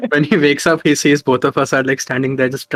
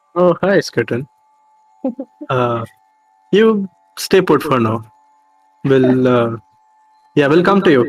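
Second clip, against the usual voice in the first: gentle, slowed-down voice. Character speaking to skeleton, in a much softer voice. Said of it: "his voice is a lot softer while talking to Skeleton".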